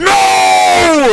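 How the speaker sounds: mock shrill, very high, loud, panicked scream. Recounting being cut off while merging onto the highway, retelling a scream. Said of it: "and I screamed".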